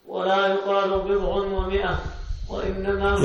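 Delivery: ordinary talk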